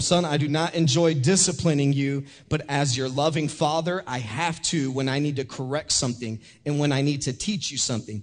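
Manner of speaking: normal talking voice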